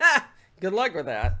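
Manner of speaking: very loud, scoffing, doubtful, snarky jeer. Showing how a tone of voice can imply someone can't get the job done: sarcastic good luck. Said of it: "Depending on your tone of voice".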